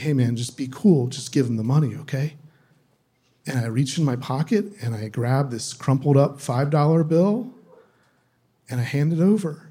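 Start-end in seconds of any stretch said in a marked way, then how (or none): 0.0-2.3 soft half-whisper under the breath. Retelling how a man with a gun spoke: imitating someone half-whispering. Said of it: "he just whispers to me".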